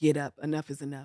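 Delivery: stern, firm tone, not scolding. Retelling a story, imitating a commanding voice heard: stern voice of god. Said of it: "he said it so stern".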